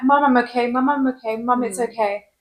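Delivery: ordinary talk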